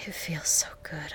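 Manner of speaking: said panting. The narrator reads the woman's words to her lover, panting. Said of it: "I panted".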